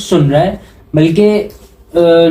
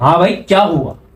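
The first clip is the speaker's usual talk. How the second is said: play-acted brash, cocky, swaggering tone full of attitude. Speaker acting out a biker turning back after hitting a car: mock-swaggering reply. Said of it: "वो टशन में बोलेगा".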